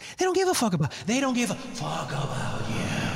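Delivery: lively, animated, swooping voice with wide pitch swings. Repeating the end of the George Carlin quote: George Carlin impression. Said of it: "he goes".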